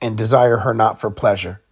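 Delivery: ordinary delivery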